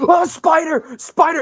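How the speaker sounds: very high, loud, slow, panicked freaked-out shriek.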